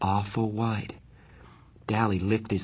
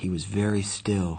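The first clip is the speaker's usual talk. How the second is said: usual speaking voice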